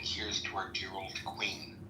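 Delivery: ordinary delivery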